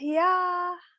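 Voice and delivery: high, sighing, unconvinced yeah. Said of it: "You don't sound so convinced".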